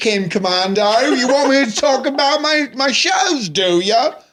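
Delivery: very high, loud, put-on Cockney accent. Asked by another speaker to try an accent: cockney accent. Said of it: "I only can do Cockney".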